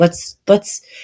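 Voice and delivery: soft, soothing, calm voice.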